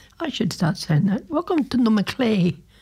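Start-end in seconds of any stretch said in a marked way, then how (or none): 1.3-2.6 put-on posh, plummy, plum-in-mouth delivery. Radio breakfast host welcoming listeners to the Macleay, in a plum-in-the-mouth voice. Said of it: "Talk like you got a plum in your mouth".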